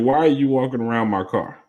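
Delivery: ordinary talk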